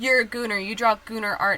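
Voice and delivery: ordinary delivery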